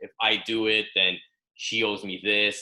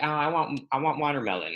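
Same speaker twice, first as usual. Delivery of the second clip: put-on cute, frivolous little-girl tone, pitched up; 6 semitones higher than usual. Recalling a man's girlfriend at brunch, the speaker is imitating a cute girly voice. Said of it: "cute voice".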